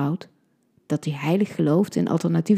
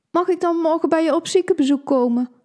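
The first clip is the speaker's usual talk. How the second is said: very high, whiny, nagging, pleading voice; 10 semitones higher, 3 dB louder than usual. Narrator reads one character's line in a conversation, whiny. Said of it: "Het klinkt zeurderig".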